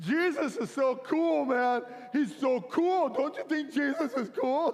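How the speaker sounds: high, slow, mock weepy blubbering through tears. Recounting how he kept talking to a pastor, retelling his own blubbering. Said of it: "I keep blubbering".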